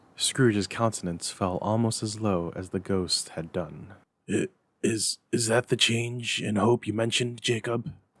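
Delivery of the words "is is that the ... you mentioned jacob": unsteady, stumbling, faltering, halting voice. Scrooge questions Jacob's ghost after hearing of three spirits, faltering voice. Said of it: "He demanded in a faltering voice".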